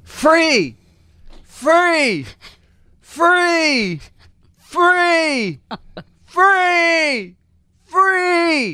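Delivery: high, loud screaming.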